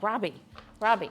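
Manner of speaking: ordinary talk, nothing marked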